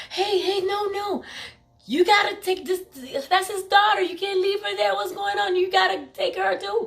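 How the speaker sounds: high, urgent, high-pitched pleading. Retelling how the people pleaded with the police: imitating people pleading. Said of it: "I just remember them pleading with the police".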